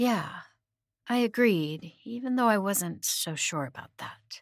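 ordinary delivery

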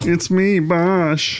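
cartoon alien voice. Asked to sound more like Bosch, a performer tries a line in Marvin the Martian voice. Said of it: "That's Marvin the Martian".

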